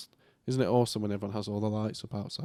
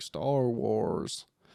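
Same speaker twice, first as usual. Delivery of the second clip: put-on Scottish accent with heavy, American-sounding R's. Imitating how the eldest child says a word, with an American-sounding accent. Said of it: "got a bit of an American accent".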